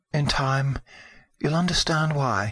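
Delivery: breaking whisper. A mother holding her son, who begs to stay, answers him in a broken whisper. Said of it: "she whispered brokenly".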